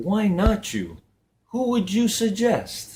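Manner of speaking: very high speaking voice with wide swooping pitch. Retelling a speech's reply to a complaining woman: Les Brown voice. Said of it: "I don't do justice to Les Brown's voice".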